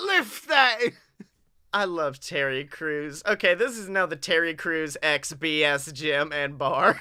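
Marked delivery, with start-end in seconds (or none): 0.0-0.8 put-on barked, higher-pitched British accent. Playing a gym leader telling someone to lift: Terry Crews in British accent.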